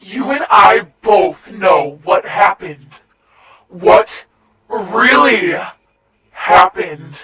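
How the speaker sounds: aggressive, low, hellish demon voice. A rotting dead woman confronts the narrator, in an aggressive demonic tone. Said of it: "She said in an aggressive, demonic tone".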